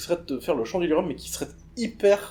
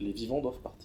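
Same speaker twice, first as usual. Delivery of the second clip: very low, very quiet, hushed murmuring voice; 5 semitones lower, 12 dB quieter than usual. In a role-playing game, voicing a voice a character hears, very deep murmur. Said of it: "dans cette voix très grave, euh, mais c'est comme un murmure".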